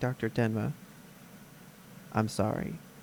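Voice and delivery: soft, hushed whisper under the breath. Retelling a scene, quoting a man whispering to himself. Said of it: "he whispers to himself".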